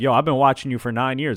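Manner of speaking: normal talking voice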